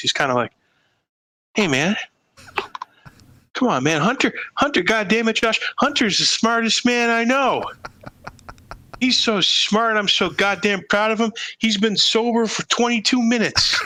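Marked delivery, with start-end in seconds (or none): 1.5-13.8 unleashed, rambling delivery, pitched a bit high. Showing how a twin brother does Joe Biden: Joe Biden impression. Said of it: "he unleashes Biden. It's kinda like this".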